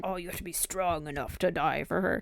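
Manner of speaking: odd, slightly raspy masculine voice. Mocking what husbands are told, mimicking men's voice. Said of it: "when I mimic men, my voice gets".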